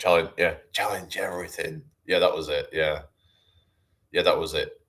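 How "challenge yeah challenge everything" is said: put-on whispering child voice. Imitating the whisper from a game company's ad: EA Games kid whisper voice. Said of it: "it's like a kid whisper voice saying".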